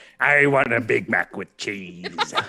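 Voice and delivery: kobold-style pirate character voice. Prompted to order in that voice, the speaker places a food order; kobold pirate voice. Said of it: "your kobold uh, pirate voice".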